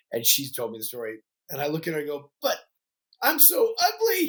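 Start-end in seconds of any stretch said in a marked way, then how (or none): 2.4-4.3 very high, very slow, drawn-out tearful voice. Retelling what they said to their mom at age thirteen: retelling a tearful line. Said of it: "And I've got tears in my eyes".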